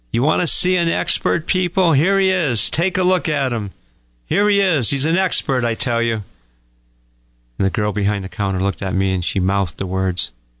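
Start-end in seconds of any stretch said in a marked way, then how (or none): 0.2-6.3 put-on showy jeer, loud, high and mocking. Retelling what a man leaning on the counter said to people, retelling a loud call-out. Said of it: "In a loud voice".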